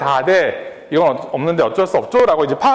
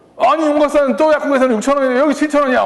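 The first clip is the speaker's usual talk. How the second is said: mock furious voice, high and angry; 9 semitones higher than usual. Retelling a customer's complaint about the price: imitating an angry customer. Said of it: "갑자기 화를 막 내시는 거예요".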